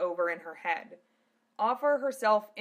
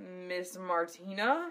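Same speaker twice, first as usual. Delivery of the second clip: confused croak, lower and quieter; 2 semitones lower, 5 dB quieter than usual. Narrator reads Zelos's line as Martina arrives to save him, croaking in confusion. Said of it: "Zelos croaked".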